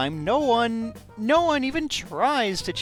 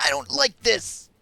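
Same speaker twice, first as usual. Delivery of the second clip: put-on childish tantrum voice, much higher pitch; 10 semitones higher than usual. Comparing it to a child throwing a tantrum over food, imitating a child's tantrum. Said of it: "child throwing a tantrum".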